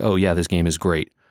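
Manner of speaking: usual speaking voice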